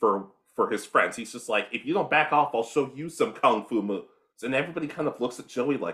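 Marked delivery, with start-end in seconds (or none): none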